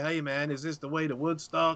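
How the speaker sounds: put-on American hippie voice. Speaker criticizing an actor's voice, imagining the character's line as an american hippie. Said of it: "sounded like an American hippie".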